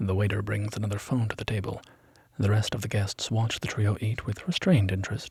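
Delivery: ordinary delivery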